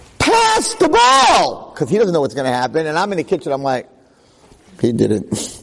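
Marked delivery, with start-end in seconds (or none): 0.2-1.7 very high, shrill, swooping screaming. Speaker retells a man screaming at a game video; imitating someone screaming. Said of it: "he's screaming at the video".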